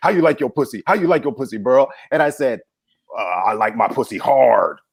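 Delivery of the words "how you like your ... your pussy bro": put-on bro guy voice, much faster. Speaker retelling a conversation, imitating how guys talk: bro guy voice. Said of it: "It was my impression of how guys talk".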